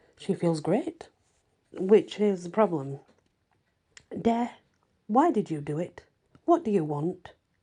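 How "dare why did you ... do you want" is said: insistent, demanding, pressing, pushing tone. Reading a story aloud, a woman confronting a vampire: demanding. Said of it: "she demands".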